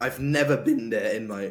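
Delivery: voice cracking, breaking mid-sentence. Speaker telling the others a story, voice cracking. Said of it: "Oops, that was a voice crack".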